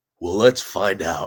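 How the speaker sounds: low, swaggering voice. Retelling a knife-fighting master's reply to a question, in James Keating's deep bravado voice. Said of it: "he's very deep bravado voice".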